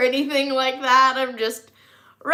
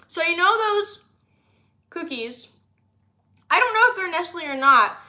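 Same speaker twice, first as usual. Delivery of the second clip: talking with mouth full, much higher; 5 semitones higher than usual. Eating snacks on camera while talking to viewers, talking with mouth full. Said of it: "trying not to speak with my mouth full".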